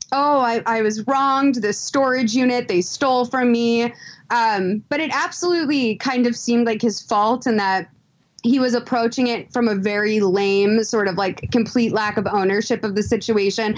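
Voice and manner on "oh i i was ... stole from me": ordinary delivery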